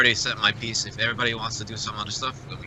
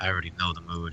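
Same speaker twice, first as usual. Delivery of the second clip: hushed, half-whispered stage whisper; 4 semitones lower, 7 dB quieter than usual. Voicing a character looking out a window: half-whispering in character. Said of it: "like whispering".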